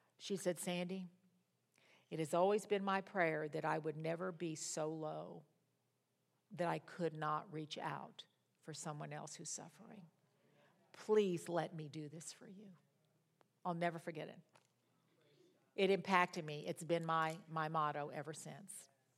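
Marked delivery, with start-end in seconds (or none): 0.6-12.7 very low, hushed, restrained, subdued voice. Sandy quoting what a woman said to her, in a low, subdued voice. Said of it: "she said in a very low, subdued voice".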